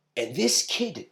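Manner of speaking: ordinary delivery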